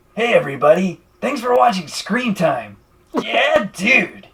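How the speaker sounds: loud, high-pitched, bold hollering delivery. Asked to show it off, speaker does a semi-decent Steve-O impersonation. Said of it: "pretty semi decent Steve-O impersonation".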